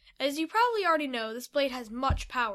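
ordinary delivery, nothing marked

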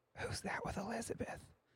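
breathy stage whisper pitched to carry. Retelling what an elderly grandma whispers on seeing a visitor: imitating a loud whisper. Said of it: "I would hear her whisper, not, not very quietly".

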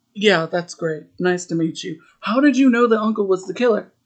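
irritated, put-out, grudging polite tone. Retelling a movie scene where the director presses again: imitating someone annoyed. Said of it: "he's, like, annoyed".

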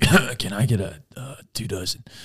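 rough, soft, slow just-woke-up voice. Retelling ordering donuts at five forty-five in the morning: imitating own rough morning voice. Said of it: "the first time you speak, sometimes a little rough".

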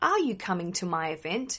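ordinary talk

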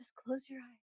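put-on seductive tone. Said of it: "it was real seductive".

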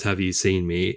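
usual speaking voice

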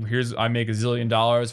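ordinary delivery

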